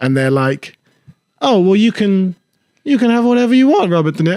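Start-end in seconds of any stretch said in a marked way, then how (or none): 1.4-4.4 higher, flustered, nervously fumbling comedian voice. Retelling an awkward podcast moment, imitating the host: James Acaster impression. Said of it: "That's my James Acaster impression".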